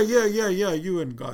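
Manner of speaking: put-on angry tone. Recalling how a man reacted, retelling his angry reply. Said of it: "He was so mad at me".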